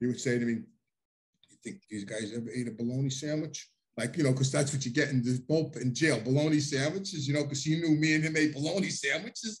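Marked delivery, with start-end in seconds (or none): 1.5-3.7 soft half-whisper, close to the ear. Retelling what he half-whispered in the speaker's ear: imitating a half-whisper. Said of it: "he would whisper in my ear".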